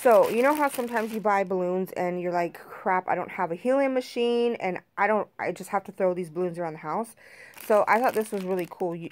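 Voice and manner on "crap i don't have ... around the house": usual speaking voice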